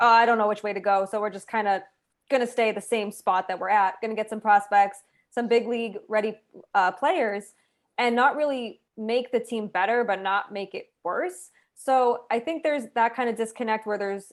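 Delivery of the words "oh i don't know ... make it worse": ordinary talk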